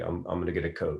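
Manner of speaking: soft regional accent with flat, flattened A sounds. Speaker demonstrating how a regional accent sounds, with flattened a's. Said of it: "you flatten your A's and you say".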